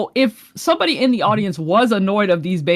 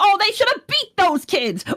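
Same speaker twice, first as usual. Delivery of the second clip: mock angry man voice, higher pitched; 11 semitones higher than usual.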